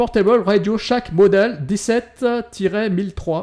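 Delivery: put-on English accent, high and slow. Naming a phone model to the others: put-on English accent. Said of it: "je vais parler avec mon accent anglais".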